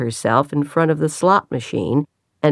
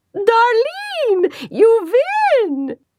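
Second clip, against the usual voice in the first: put-on very high, swooping excited cry, strong Swedish accent. A woman at the machine calls to the winner, excited cry, strong Swedish accent. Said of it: "her Swedish accent coming out more strongly in her excitement".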